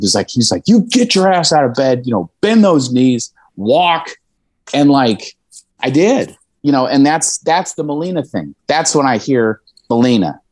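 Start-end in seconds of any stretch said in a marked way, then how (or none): 0.7-3.3 put-on old man scream, higher. Retelling how a grandpa yelled at a despairing kid in bed: imitating a screaming grandpa. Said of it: "I was so mad at him for screaming at me".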